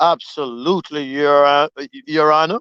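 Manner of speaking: a man's deep, low-pitched voice. Retelling a courtroom moment, answering the judge as Rob in a deep voice. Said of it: "you should have heard that deep voice".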